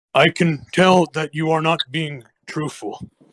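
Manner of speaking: sighing, put-on character voice. Narrator voices the character Hager, Hager sighing. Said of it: "Hager sighs".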